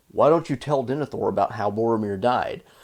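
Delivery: plain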